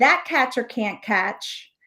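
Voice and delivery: ordinary talk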